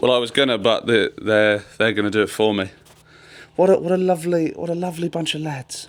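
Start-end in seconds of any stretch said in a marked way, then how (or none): 3.5-5.4 high, creepy, unsettling delivery. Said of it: "why is that so creepily?".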